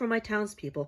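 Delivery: plain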